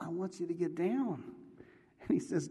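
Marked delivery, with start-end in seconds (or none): 0.0-1.2 whispered. Retelling a story of a voice speaking to a praying man: imitating a whisper. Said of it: "the whisper keeps going".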